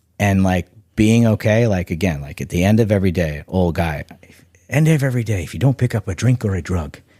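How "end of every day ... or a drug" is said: put-on Irish brogue accent. Speaker quotes a long-sober Irish man's saying; put-on Irish accent. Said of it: "I don't know if that was a good accent or not".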